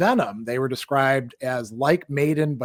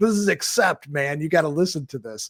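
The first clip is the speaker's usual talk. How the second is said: confiding, knowing, in-the-know insider tone; 2 semitones higher than usual. Retelling older kids handing over a cassette: imitating an in-the-know tone. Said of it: "always said in this kind of tone of voice".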